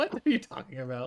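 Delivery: laughing, baffled disbelief. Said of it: "I was like".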